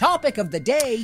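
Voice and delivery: very high, very loud, excited enthusiastic announcement. Introducing the topic of the day again, enthusiastic. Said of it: "Is more enthusiastic".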